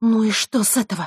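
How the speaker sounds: uneasy, nervously spoken. Struggling to free her arm, a woman answers back; nervous. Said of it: "нервно произнесла она".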